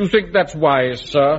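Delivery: supercilious, lofty, superior tone. Telling Wilson off, mimicking how Wilson talks down to him in Wilson's supercilious voice. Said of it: "say in that supercilious voice".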